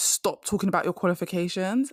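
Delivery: ordinary delivery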